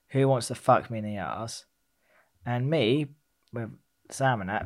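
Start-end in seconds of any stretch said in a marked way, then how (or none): none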